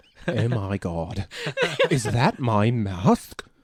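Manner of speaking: put-on British accent, loud and swooping. Imagining what another man would say, in a British accent. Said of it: "I can't get over the British thing now".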